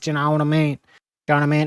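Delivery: inner-city Dublin accent. Explaining how inner-city Dubliners talk, the speaker demonstrates a McGregor-style Dublin accent. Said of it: "they kind of talk like this".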